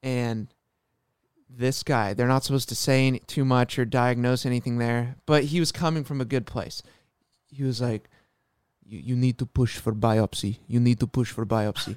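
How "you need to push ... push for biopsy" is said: put-on deep, gnarly Russian accent. Quoting a guy who wasn't supposed to diagnose, in a gnarly deep russian voice. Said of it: "Gnarly, gnarly deep, like, Russian voice".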